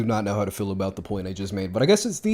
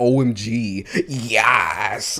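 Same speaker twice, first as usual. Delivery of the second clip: cringey, dumb "yas", very slowly stretched out. Retelling own past line, imitating own dumb "yas" delivery. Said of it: "I say it in such a dumb way".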